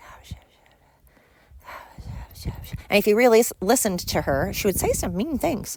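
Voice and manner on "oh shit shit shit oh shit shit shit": very quiet, slow, hushed whisper under the breath. Imitating a TV show character who whispered all the time: imitating a whispering character. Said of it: "whispered all the time".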